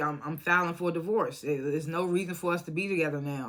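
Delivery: normal talking voice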